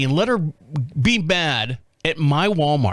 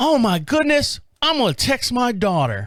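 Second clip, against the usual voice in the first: put-on slight southern drawl, higher; 8 semitones higher than usual. Retelling a shopper's surprised reply: imitating a slight southern drawl. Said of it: "a little southern drawl to her".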